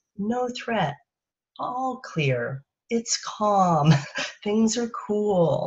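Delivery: unhurried, soft, quiet, reassuring calm voice. Demonstrating a voice that signals no threat, slower, quieter calming voice. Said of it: "I'm talking slower. I'm talking quieter".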